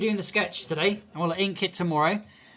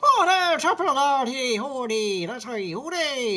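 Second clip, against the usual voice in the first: mock Irish accent, higher pitch; 7 semitones higher, 3 dB louder than usual. Joking about sounding Irish, showing it: put-on Irish accent. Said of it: "that's Irish".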